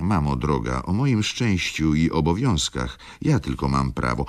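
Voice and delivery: ordinary delivery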